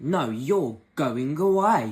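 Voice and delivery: very loud, very slow, sassy, dismissive tone. Retelling a scene from the show where Five sends someone away: imitating sassy Five. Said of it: "so Five is really sassy".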